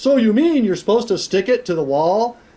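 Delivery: loud mock showman delivery. Retelling grabbing a penny and speaking to the room: retelling saying it loud. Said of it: "and I said loud".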